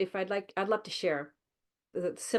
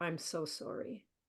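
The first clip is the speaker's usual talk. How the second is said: very soft, gentle voice; 9 dB quieter than usual. Quoting what he said while gently touching my shoulder, in a very soft voice. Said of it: "in a very soft voice".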